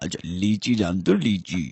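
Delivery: put-on low, gentle old man voice.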